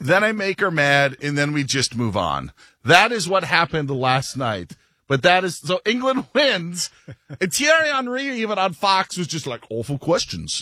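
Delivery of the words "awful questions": bad British accent, pitched low. Recounting Thierry Henry on Fox, unhappy with the interviewer: Thierry Henry in awful British accent. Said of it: "that was an awful British accent".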